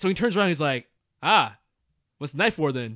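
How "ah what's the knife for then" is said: acted, dry, matter-of-fact, unbothered delivery. Retelling what a game character says on finding a knife: imitating a dry delivery. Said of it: "dry and just like".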